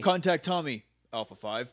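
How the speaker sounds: put-on delivery, one word sounding separately recorded. Imitating Zordon's line where the name sounds separately recorded: imitating Zordon's spliced line. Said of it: "sounds like it was recorded in a different session".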